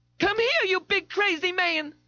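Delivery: very high, loud hollered shout. Narrating a story, Darlene calls out to a man, hollering. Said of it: "Darlene hollered".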